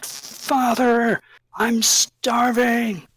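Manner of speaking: very high, crying-out pleading voice. Voicing a young man calling from beneath the floor: Doru crying out. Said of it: "it's crying out".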